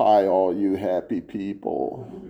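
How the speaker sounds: the most pitiful cartoon voice, low, soft and quiet. Recalling how the cartoon character Droopy always began: imitating Droopy's pitiful voice. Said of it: "saying in the most pitiful voice".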